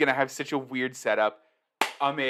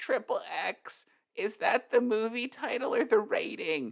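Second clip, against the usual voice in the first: put-on high, slow little kid voice; 9 semitones higher, 4 dB quieter than usual. Tell a real-life story of your friends all making the same joke, in a little kid voice. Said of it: "That's my little kid voice".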